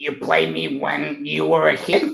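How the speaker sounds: raspy, smoker-like cartoon voice. Answering a fan in character as Sonic; raspy smoker's Sonic voice. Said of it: "Sonic, are you smoking cigarettes?".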